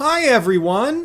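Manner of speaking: very high register, loud announcer voice. Quoting a Rockstar statement, the speaker greets everyone in a higher-register Rockstar voice. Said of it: "I'm going to use that higher register voice".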